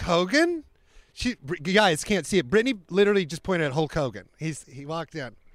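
normal talking voice

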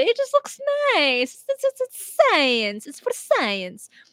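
put-on Italian accent. Voicing scientists showing off their meatball to the world: italian accent. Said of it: "it just felt appropriate to use an Italian accent there".

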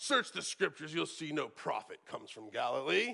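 low, put-on superior, condescending, deriding tone. Teaching scripture, quoting how the Pharisees deride, mock-condescending Pharisees. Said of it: "as the Pharisees condescendingly deride".

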